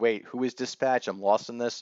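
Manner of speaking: normal talking voice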